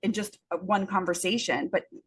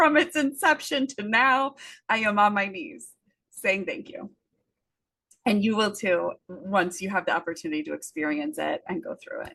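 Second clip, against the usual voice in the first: emotional, tearful, on the verge of tears; 3 dB louder than usual. Speaker talking about Stress Mastery Academy, tearing up as they speak. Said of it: "I'm like tearing up over here".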